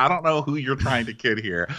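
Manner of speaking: ordinary talk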